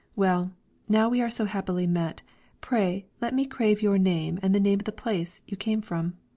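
plain reading voice

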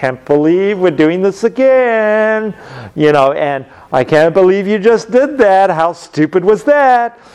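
put-on snide, scornful, contemptuous delivery. Explaining signs of a marriage in trouble, acting out a partner's contempt. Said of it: "somebody was kind of rolling their eyes".

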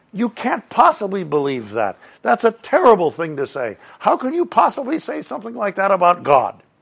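very high, swooping, indignant, preachy, self-righteous tone. Retelling an argument, the speaker mimics the opponent's self-righteous comeback. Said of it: "self-righteously he comes back at me and says".

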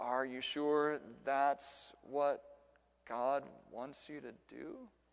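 drawn-out, slow, soft southern drawl, stretched long. Retelling a southern man from Arkansas questioning the speaker on the phone: slow southern drawl. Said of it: "in a really slow southern drawl".

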